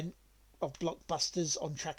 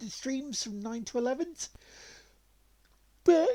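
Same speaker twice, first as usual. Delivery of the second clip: high, loud talk stretched through a yawn; 8 semitones higher, 5 dB louder than usual. Speaker announcing their stream schedule to listeners, yawning while talking. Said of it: "I'm yawning and stretching at the same time".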